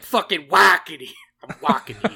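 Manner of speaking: bad, very loud, high Bronx accent. Podcast host trying out an accent on air, in a bad bronx accent. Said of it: "Bronx or New York accent".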